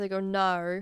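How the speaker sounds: put-on Australian accent. Two friends practice their accents; one is imitating an Australian accent. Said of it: "practice our Australian accents".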